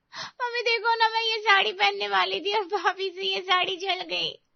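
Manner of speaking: tearful voice. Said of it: "रो क्यों रही हो?".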